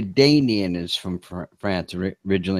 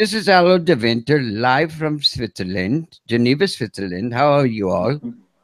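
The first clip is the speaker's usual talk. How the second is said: slow, put-on, decent German accent throughout; 3 semitones higher than usual. Imitating a guest being invited onto the show, German accent. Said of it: "that was a decent German accent".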